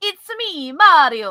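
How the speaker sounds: belted out high and badly. Taking a turn at a Mario impression when asked: bad Mario impression. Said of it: "that's the best I got".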